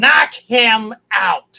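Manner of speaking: loud, yelling storybook wicked-witch voice. Retelling Stephanie McMahon yelling at Big Show about Dusty, in a Wicked Witch of the West voice. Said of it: "Wicked Witch of the West voice".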